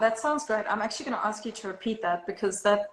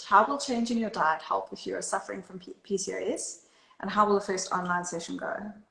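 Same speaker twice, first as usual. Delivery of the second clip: plain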